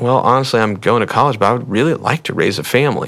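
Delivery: ordinary talk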